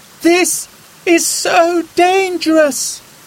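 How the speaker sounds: very high, loud, drawn-out yell. Narrator reads a girl crossing a deepening river, shouting over roaring water. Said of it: "she shouted over the roar of the rushing water".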